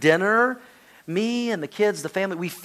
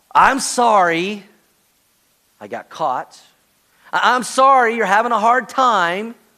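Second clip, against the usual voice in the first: high, loud, hollow, insincere tone. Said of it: "Remorse says".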